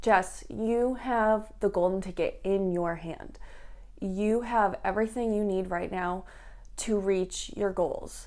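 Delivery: ordinary talk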